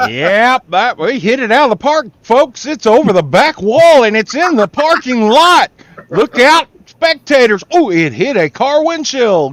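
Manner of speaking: play-by-play radio announcer voice. Mid-conversation, one speaker breaks into a radio announcer voice. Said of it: "his radio announcer voice works perfectly for this".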